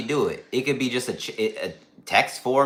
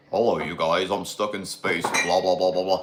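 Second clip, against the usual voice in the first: put-on 1940s-style voice, lower pitched; 6 semitones lower than usual. Mocking a dude who talks about the Titans, imitating a voice from the 1940s. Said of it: "he sounds like he's from 1940s".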